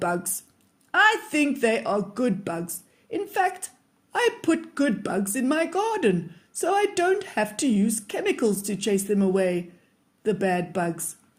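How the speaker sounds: usual speaking voice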